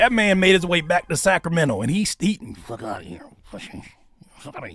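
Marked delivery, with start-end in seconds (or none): 2.6-4.8 ventriloquist voice whispered under the breath. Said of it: "look like a ventriloquist".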